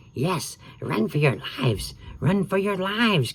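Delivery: hoarse, raspy, hissing, high-pitched voice. Narrator reading a story, voicing the soothsayer woman in a raspy, hissing voice. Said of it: "came a raspy, hissing voice".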